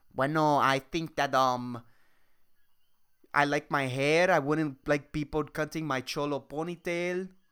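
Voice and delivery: horrible put-on Spanish accent. Voicing an imagined answer about the kid's haircut, in a horrible put-on Spanish accent. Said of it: "that's a horrible accent".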